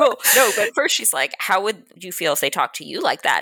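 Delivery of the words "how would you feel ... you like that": ordinary talk, nothing marked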